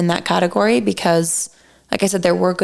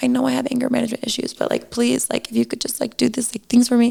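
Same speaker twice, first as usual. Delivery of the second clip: high-pitched pleading through tears; 5 semitones higher than usual. Retelling a recorded talk with him, speaker imitates their own past crying. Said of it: "I'm literally crying".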